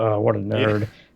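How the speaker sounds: acted whisper under breath. Retelling what a girl in a film says to herself: imitating a whisper under breath. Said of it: "whispers under her breath to herself".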